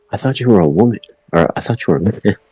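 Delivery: half under the breath, nearly muttered. Describing a character's quiet remark to a player at the table, almost under her breath. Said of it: "almost under her breath".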